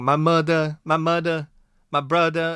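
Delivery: put-on Boston accent. Mocking a man's bad attempt at the accent, in a very fake Boston accent. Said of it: "very fake, awful sounding Boston accent".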